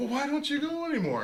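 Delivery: innocent, high-pitched tone.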